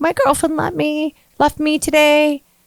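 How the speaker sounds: put-on weepy grown man voice. Retelling a customer at the table who cried: imitating a grown man crying. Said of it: "cry, like a grown man crying".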